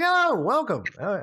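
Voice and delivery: bright, cheery, high and loud delivery. Voicing a man greeting players as they walk into a shop, cheery guy voice. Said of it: "this cheery guy. He's like".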